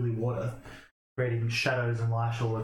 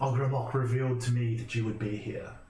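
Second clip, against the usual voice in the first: deep, low, hooded-figure character voice. Narrator voices a hooded figure who turns around, in a deep, booming voice. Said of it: "he says in his deep, booming voice".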